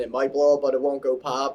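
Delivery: ordinary delivery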